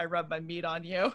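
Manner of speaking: mock deadpan, dead serious delivery. Retelling what he said in the kitchen: imitating someone dead serious. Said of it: "he said it, like, dead serious".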